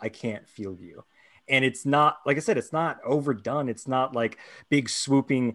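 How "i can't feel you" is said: put-on tearful speech, much quieter. Retelling a character's line as she touches his cheek, imitating speaking through tears. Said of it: "just through tears".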